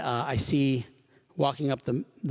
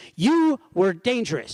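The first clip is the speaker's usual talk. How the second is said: mock screaming, much higher, louder; 11 semitones higher, 6 dB louder than usual. Retelling a woman who came up to the window, imitating someone screaming. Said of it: "she's screaming at me".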